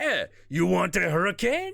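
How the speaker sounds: put-on Creole accent with voice kept high. Describing a man with an ice cream cart approaching at night, Creole accent. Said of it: "with a Creole accent".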